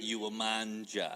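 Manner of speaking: put-on grandma voice. Recalling Sunday dinners, the speaker quotes Grandma urging him to eat, imitating Grandma's accent. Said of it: "I do that accent".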